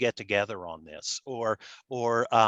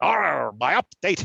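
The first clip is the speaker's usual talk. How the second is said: rough, raspy, raised put-on pirate growl on "arr"; 5 semitones higher, 5 dB louder than usual. Trying a pirate-like voice after being told to sound like a pirate. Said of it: "you gotta sound like a pirate".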